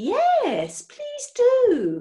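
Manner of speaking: overcome, swooping fluster. Hecky answers Mr. Knapsack, who asked to come in; quite overcome. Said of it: "Hecky was quite overcome".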